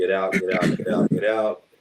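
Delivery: ordinary delivery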